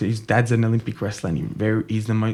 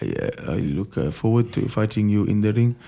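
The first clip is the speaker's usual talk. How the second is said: terrible, fake put-on Russian accent. Imitating a Russian fighter talking to an opponent, in a bad Russian accent. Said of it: "Worst Russian accent ever".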